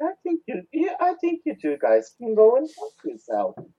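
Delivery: very high, sweet, sing-song polite tone. Retelling how an old lady told two visitors off: imitating someone speaking politely. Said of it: "she says it so politely".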